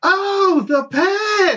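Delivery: very high, loud, carrying put-on call-out. Retelling a store clerk's reply to a request: imitating a loud call. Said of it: "she just says it loud as shit".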